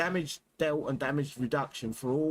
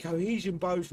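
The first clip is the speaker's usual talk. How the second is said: ordinary delivery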